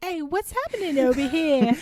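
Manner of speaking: high, laid-on, ladylike put-on woman's voice. Mocking a disguised character who sounds like a woman: imitating a woman's voice. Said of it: "Literally in this voice".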